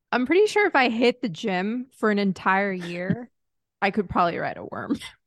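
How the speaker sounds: plain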